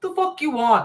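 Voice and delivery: put-on Brooklyn Italian accent, woman's voice. Imagining a woman coming face to face with an alien, brooklyn italian woman accent. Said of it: "a Brooklyn Italian woman come face to face".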